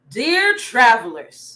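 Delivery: manly king voice, acted as a role. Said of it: "In my king's voice".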